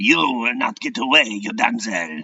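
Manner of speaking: put-on French-accented villain voice, menacing. Drawing a villain and voicing him: french villain voice. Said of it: "And why is he French?".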